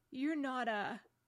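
wavering, trembling, frightened voice. Susan, frightened to see Aslan alive again, asks him in a shaky voice. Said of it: "asked Susan in a shaky voice".

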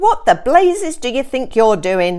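shouting at full volume. Mr. d sees a cat walk into his kitchen; shouted. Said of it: "Shouted Mr".

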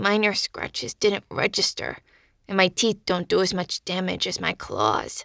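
speaking with a snarl. A clawed creature replies to the narrator, snarling the words. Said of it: "He snarled the words in my mind as he opened his jaw by increments, ... licking his mouth with an odd quirk to his muzzle".

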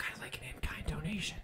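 soft, unvoiced whisper under the breath. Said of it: "he whispers and he says".

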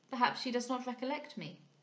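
usual speaking voice

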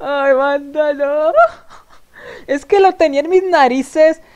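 loud, cracking up and laughing through the words. A streamer talking to viewers about what was missing, cracking up laughing. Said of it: "Yo me parto de risa".

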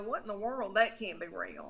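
ordinary talk

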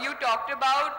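speaking up.

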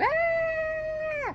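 very high, put-on cat yell.

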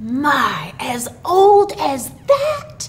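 swooping, rising, cried-out marvelling tone. Narrator reading a character's reply to a five-year-old boy, crying out. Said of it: "cried Santa Claus".

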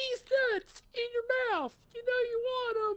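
highest-pitched, very high squeaky voice. Retelling a man suddenly saying something, in the highest pitched voice. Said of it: "in the highest pitched voice".

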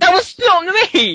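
furious angry yelling. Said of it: "Is that why he shouts and gets really angry?".

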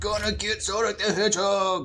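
flat, level, monotone villain voice. Mid-game with a friend, doing a quick bit in Robotnik voice. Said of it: "That's my Robotnik voice".

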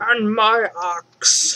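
bad put-on dwarf voice. Needing an axe, the speaker quips in a horrible dwarf impression. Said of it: "That's a horrible dwarf impression".

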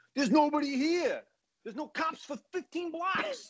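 exaggerated New York accent, very high, swooping. Quoting the kid on the bike, in an over-the-top New York accent. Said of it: "The New York accents are over the top".

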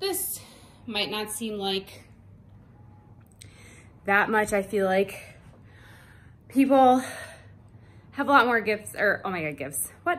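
out of breath. Speaker just back from running up and down the stairs: out of breath. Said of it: "I'm delusional because I'm so out of breath".

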